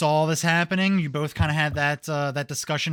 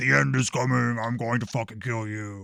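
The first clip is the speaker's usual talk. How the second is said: deep voice, dropped low; 4 semitones lower than usual. Describing a threat heard from afar: deep booming voice. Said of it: "the deep booming voice saying things like".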